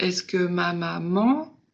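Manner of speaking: final syllable "man" in "maman" stretched long. French lesson stretching an elastic to show length: long stretched man in maman. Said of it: "il est vraiment très allongé sur man, qui est la syllabe la plus longue".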